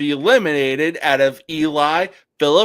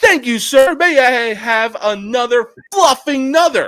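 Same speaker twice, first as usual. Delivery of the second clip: put-on yelling, pitched higher; 8 semitones higher, 3 dB louder than usual. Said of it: "But it's just yelling".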